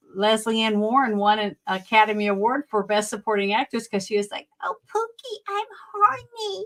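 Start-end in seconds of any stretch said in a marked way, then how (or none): 4.6-6.7 very high, slow, dopey stupid voice. Recalling a film, speaker mimics an actress's line in Lesley Ann Warren's stupid voice. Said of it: "with that stupid voice".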